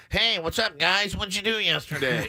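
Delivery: nasal, nasally sounding voice. A host mimics how their own voice sounds on promos, nasal voice. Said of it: "It's all nasally and garbage".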